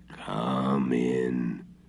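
harsh rasping voice. Marusha knocks at the hut door and a voice answers: grating voice. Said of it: "answered a grating voice".

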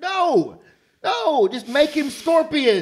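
very loud, very high, swooping yell. Ranting about a new hero who isn't from the game, yelling. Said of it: "Now I'm yelling".

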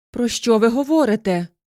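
startled, suddenly cried-out exclamation. A young woman answers a man's sudden marriage proposal, exclaiming. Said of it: "вигукнула молода жінка".

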